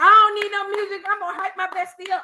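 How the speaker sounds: loud, high, hollering cheer. Telling about an awards event, the speaker imitates a girl hollering. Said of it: "this girl just started hollering".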